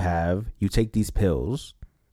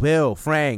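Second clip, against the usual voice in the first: put-on yelling, higher; 5 semitones higher than usual. Retelling a scene where Joel searches the house: imitating Joel yelling. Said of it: "he's, like, yelling".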